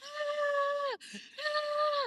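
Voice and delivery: very high, drawn-out, top-of-the-lungs shriek. Reenacting their own screams from a story, retelling own loud scream. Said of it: "I'm screaming to the top of my lungs".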